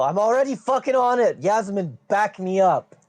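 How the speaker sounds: high, rallying character voice. Voicing a character in a fight, calling for backup: yelling in character. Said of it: "I'm gonna yell".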